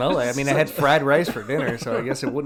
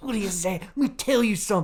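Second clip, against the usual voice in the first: put-on impression voice, much higher pitch; 7 semitones higher than usual. Discussing an actor's roles, one speaker imitates him as Shane. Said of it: "a certain octave".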